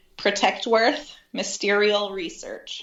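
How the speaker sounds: slow, deliberate, drawn out word by word. Repeating a team's name right after asking for it slow, said slowly. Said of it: "say it slow".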